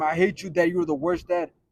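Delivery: ordinary delivery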